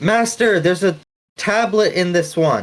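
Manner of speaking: excited, thrilled tone with lifted pitch. Voicing a character who finds a tablet: excited shout over a loudspeaker. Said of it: "really excited this time, he turns on his loudspeaker".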